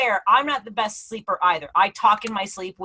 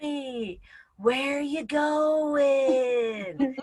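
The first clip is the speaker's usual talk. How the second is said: mock-patronizing tone, higher pitch; 4 semitones higher, 5 dB quieter than usual. Retelling how her husband talks to her when she sleepwalks, imitating a patronizing tone. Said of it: "talks to me like I'm a mental patient".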